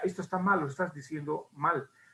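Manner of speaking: usual speaking voice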